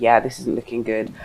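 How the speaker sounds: normal talking voice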